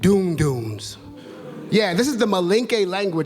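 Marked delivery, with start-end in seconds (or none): 0.0-1.0 doon doons dropped to a very low pitch. Naming drums in a tonal language, lower pitch on doon doons. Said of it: "I dropped my voice a bit".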